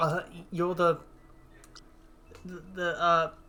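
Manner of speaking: play-acted nervous, halting, tongue-tied stammer. Voicing a frightened character who is cornered: nervous stammer. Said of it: "you just hear him stammer".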